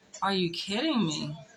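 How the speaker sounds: put-on shocked, stunned, disbelieving exclamation. Retelling hearing the news of a death: imitating own shocked disbelief. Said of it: "I was so shocked".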